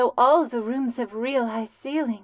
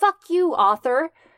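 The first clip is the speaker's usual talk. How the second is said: put-on female voice, a touch higher pitched; 5 semitones higher, 4 dB louder than usual. Speaking a line for a character in the story, in Heather's voice. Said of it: "I'll say it in her voice".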